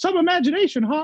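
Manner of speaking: high, round, swooping cartoon mouse voice. Voice actor comparing the Walt and Wayne Allwine versions, rounder Wayne Allwine voice. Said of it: "a little rounder".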